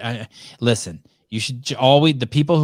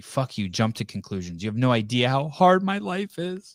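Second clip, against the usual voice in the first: mock sobbing, quieter; 5 dB quieter than usual. Complaining that listeners will judge anyway, fake crying. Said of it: "Just fake crying like that".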